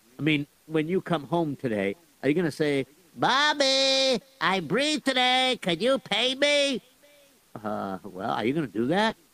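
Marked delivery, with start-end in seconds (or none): 3.2-6.8 high, slow imitated kid voice. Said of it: "That was a pretty good imitation of me".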